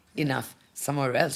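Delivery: ordinary delivery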